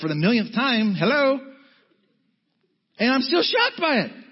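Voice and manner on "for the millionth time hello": heavily sarcastic tone. Pretending God answers the speaker's surprise: mock sarcastic God voice. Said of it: "if God was as sarcastic as me".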